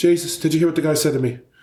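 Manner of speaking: put-on very high, sassy Irish accent. Retelling what Mary said to him in the pub on Saint Patrick's Day, imitating Mary's Irish accent. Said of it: "I'm sorry if the accent, the dialect's wrong".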